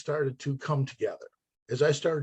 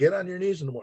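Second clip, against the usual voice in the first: stern, strict military commanding tone; 3 semitones higher than usual. The speaker retells the morning order a man always gave, imitating a stern colonel's voice. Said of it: "that stern colonel's voice".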